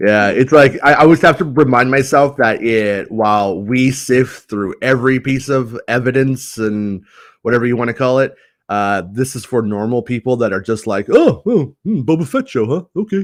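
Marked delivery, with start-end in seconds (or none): 11.1-13.2 loose, high, sing-song voice with swooping pitch. Imitating normal viewers reacting to the Boba Fett show: Al Bundy voice. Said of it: "I love that voice".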